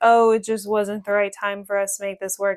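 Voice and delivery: plain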